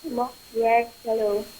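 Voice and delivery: soft, faint voice, barely above a murmur. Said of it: "can you please speak up a little for us".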